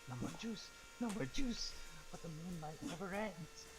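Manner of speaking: high, quiet mutter under the breath. Voicing a character crawling prone around an ally's legs: quietly to himself. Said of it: "saying quietly to myself".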